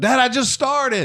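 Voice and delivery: high, shrill scream at top of lungs. Father retelling his daughter screaming from upstairs, retelling a scream. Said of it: "she screams out".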